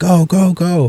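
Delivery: high-pitched mock screaming cheer.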